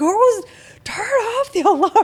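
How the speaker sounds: very loud, shrill, high, drawn-out top-of-lungs scream. Retelling a night when the alarm went off, imitating husband screaming.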